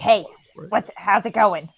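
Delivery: put-on goblin mother voice.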